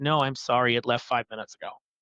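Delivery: breezy, utterly unbothered, nonchalant offhand tone. Retelling a missed flight, speaker imitates the airport lady's nonchalant reply. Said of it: "very, very nonchalantly, like not a care in the world".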